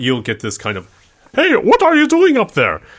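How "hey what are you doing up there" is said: shrill, loud, yelled put-on German accent. Explaining how tugging the rope draws a shout from above, in a german accent. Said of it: "nice German accent".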